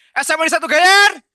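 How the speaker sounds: high-pitched, loud shouting. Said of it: "Coba teriak suara, suaranya keras ya".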